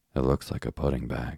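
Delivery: ordinary delivery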